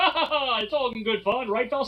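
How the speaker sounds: mock dismissive laughing tone. Retelling how he spanks the kid, imitating him laughing it off. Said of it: "to be like".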